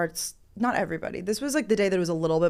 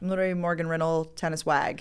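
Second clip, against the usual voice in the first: ordinary talk, nothing marked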